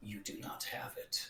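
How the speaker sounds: low rattle from the throat. Narrating what a character will say, low rattling rumble. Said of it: "a low rattle is gonna is going to uh, rumble out of his throat".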